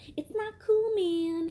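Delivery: shrill, loud, very high nagging scolding woman's voice. Retelling a woman who followed him as he walked away, doing an impression of her. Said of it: "That's my impression of her".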